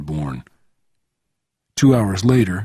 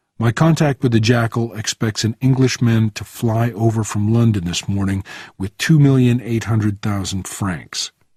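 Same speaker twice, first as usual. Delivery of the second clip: ordinary delivery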